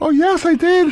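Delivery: very high, silly squeaking voice. Doing an impression of Fez at a caller's request: Fez impression. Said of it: "This sounds nothing like me".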